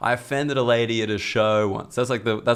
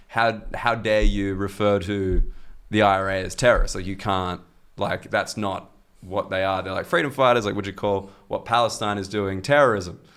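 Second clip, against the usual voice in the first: ordinary talk, nothing marked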